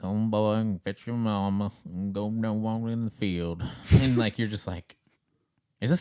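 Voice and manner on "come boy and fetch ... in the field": rural hillbilly farmer voice. Describing an actor's movie role to friends, Thomas Jane hillbilly farmer voice. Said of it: "like farmer hillbilly dude".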